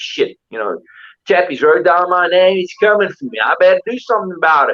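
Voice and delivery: put-on Western-movie cowboy accent. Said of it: "this accent that you keep".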